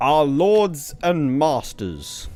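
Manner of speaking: booming, projected bardic performance voice. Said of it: "my best performance projection voice".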